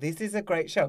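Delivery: ordinary talk, nothing marked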